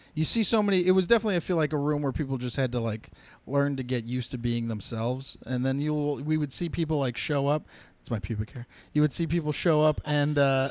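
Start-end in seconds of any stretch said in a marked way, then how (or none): 8.0-8.6 whispered aside, lower. Breaking off in the middle of a story, whispering. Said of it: "You can't just whisper".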